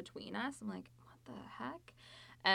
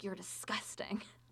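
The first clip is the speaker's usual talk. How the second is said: put-on hiss, much quieter; 3 dB quieter than usual. Retelling what a woman hissed at the speaker, imitating a hiss. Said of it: "she like hissed at me like".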